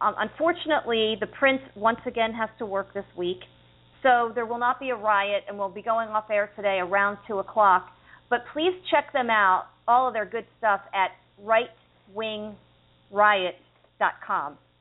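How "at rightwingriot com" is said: very slow, deliberate enunciation, each part drawn out. Speaker on air giving the show's website address: very slow on purpose. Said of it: "I say that very slowly on purpose".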